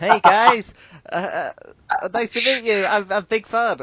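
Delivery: loud, slow, very squeaky voice, stumbling over words. Retelling how a new player greeted the group: imitating a squeaky voice. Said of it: "the squeakiest voice I have ever heard".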